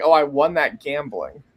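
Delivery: put-on nonchalant, offhand child voice. Retelling what a fourteen-year-old said about a belt: imitating a nonchalant kid. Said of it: "he's saying it, like, so nonchalant".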